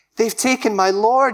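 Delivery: high voice full of anguish. Retelling Mary at the tomb answering the angels, in an anguished voice. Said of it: "Hear the anguish in her voice".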